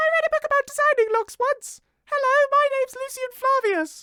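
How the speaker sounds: booming, very high-pitched, loud character voice. Speaker plays their character Lucian, high Lucian voice. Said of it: "I love how high my voice goes when I'm doing Lucian".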